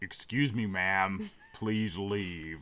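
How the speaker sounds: cross, fake-angry, dismissive put-on voice. Telling a friend how the kids club staff would turn her away, mock-angry voice. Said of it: "In their like angry voice".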